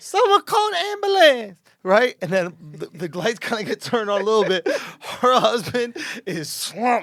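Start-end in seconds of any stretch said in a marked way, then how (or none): 0.0-1.6 put-on very high, panicky, panicked old-lady cry. Retelling a show where a woman's husband slumped over, imitating a panicked old lady. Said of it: "Why are you making her sound so stupid?".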